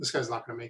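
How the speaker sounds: flat, expressionless, low and quiet deadpan. Retelling what a man said after viewing a patient's MRI, imitating a deadpan delivery. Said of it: "he was just deadpan, dead face".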